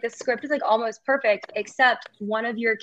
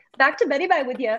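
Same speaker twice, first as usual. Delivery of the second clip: put-on Scottish nurse's accent; 4 semitones higher than usual. Quoting a scottish nurse from the movie: imitating a scottish accent. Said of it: "the nurse that was, like, Scottish".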